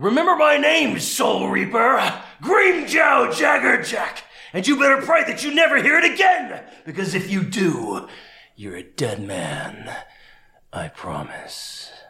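very high, loud, ringing, swooping battle yell. A voice actor demonstrates his audition role for the hosts: loud Grimmjow voice. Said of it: "it's a little loud, so sorry if I blow out your microphone".

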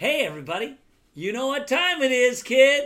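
put-on high, loud hyped-up kids' show host voice. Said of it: "I have to introduce it to you".

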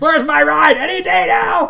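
loud, high, stretched-out holler. Retelling what a woman kept yelling at her, retelling a yell. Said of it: "she's just yelling".

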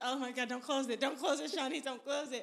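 mock-panicking, acted panicked talking to oneself. Recalling getting eyelash glue in the eye, acting out past panic. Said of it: "I'm panicking because I'm like".

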